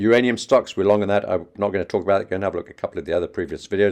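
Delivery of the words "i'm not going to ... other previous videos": very fast, rushed speech. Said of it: "Talking very fast to try and keep this video short".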